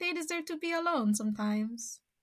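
put-on Italian accent. Commenting on celebrities wanting privacy: put-on Italian accent. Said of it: "That's my Italian accent".

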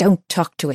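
hissing, hissed rat voice. Reading a story, the other rat speaks up: hissed. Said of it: "hissed the other rat".

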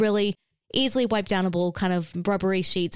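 usual speaking voice

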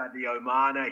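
Liverpool Scouse pronunciation and accent. Chatting with friends, the speaker repeats a name in a Scouse accent. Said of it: "I'll even do a Scouse accent".

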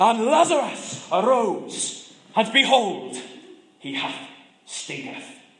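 put-on heavy Welsh accent, slow, swooping, drawn-out bellow. Retelling a man telling a Bible story at a baptism, bellowing in thick Welsh accent. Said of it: "in his thick Welsh accent, he bellows".

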